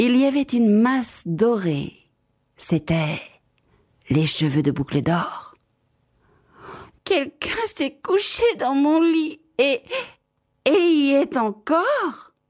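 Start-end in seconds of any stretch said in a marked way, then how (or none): 7.0-12.2 tiny, very high, fluted, piping little-bear voice. Narrator reading Goldilocks, voicing the littlest bear finding her, in a tiny piping voice. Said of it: "de sa toute petite voix flûtée".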